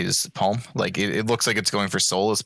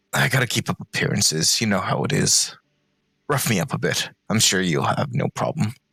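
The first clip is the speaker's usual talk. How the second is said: confidential, leaning-in stage whisper aside. Voicing a character who leans in to a fighter: half-whispering in character. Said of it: "leans in and whispers".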